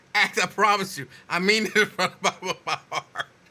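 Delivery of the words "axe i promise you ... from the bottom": earnest tone broken by loud, high laughter. Trying to apologize seriously but unable to stop laughing: laughing while talking. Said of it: "I have a condition".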